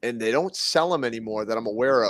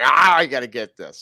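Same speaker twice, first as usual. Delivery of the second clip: very loud, deliberate, drawn-out angry grumble; 8 dB louder than usual. Imitating the other speaker angry eating: imitating someone angry. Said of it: "I can see how angry you were".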